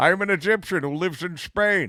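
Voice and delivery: put-on Scottish accent. Mocking an actor's accent in a film role: Sean Connery impression. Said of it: "here's my Scottish accent".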